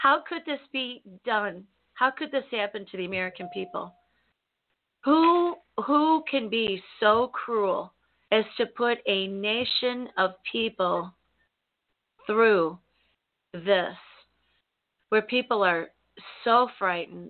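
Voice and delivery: tearful voice, holding back tears. Recalling a morning spent crying, speaking while holding back tears. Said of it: "I'll try not to cry as I say it".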